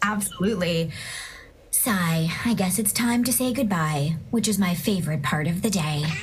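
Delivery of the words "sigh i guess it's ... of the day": cartoon character voice with a spoken sigh. Asked to say goodbye to Cody, the guest performs Lucy's voice from Loud House. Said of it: "say goodbye to Cody in Lucy's voice from Loud House".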